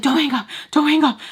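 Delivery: mock screaming, very high, loud, out of breath. Retelling a phone call where her mom screamed: imitating someone screaming and panting.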